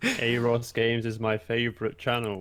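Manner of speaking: loud, slow, sarcastic tone.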